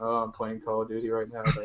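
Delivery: mocking droning monotone, very low and very quiet. Speaker mocks gameplay videos with monotone commentating, mocking monotone commentary voice. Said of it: "your monotone commentating".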